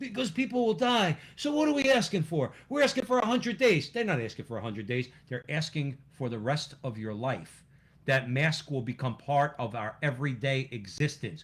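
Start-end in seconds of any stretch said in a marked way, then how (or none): 0.0-3.9 put-on pleading politician voice, pitched higher. Imitating a politician defending restrictions: bad Joe Biden impersonation, pleading. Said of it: "He's going".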